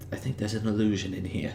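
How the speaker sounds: whispering. Whispering a warning to the rest of the party: whisper. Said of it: "I'm gonna whisper to the rest of the party".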